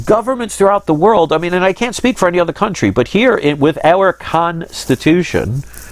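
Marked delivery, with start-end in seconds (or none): 3.6-5.6 con of Constitution stressed and slowed. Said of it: "I keep emphasizing the word con".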